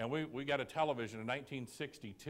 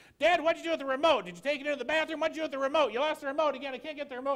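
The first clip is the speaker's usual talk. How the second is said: very high, shrieking, fast rattled-off screaming fit; 11 dB louder than usual. Telling a family story, the speaker is imitating daughter screaming at dad. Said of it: "She starts screaming".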